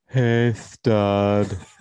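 put-on lisping male voice. Describing a ghost's voice greeting you as you walk out, lisping male voice. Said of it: "With a lisp and all".

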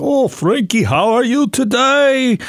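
put-on Eastern European accent, high in pitch. Retelling how a doctor who hardly spoke English greeted him: imitating an Eastern Bloc European accent. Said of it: "this Eastern Bloc European".

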